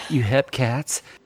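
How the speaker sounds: whispering. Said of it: "I'm just gonna whisper this".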